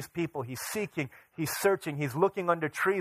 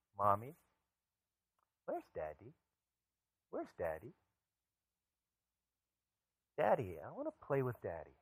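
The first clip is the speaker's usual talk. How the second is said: put-on small child's voice, quieter; 5 semitones lower, 11 dB quieter than usual. A mother retelling her child asking her for Daddy while she works: small child's voice. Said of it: "I hear this little voice asking".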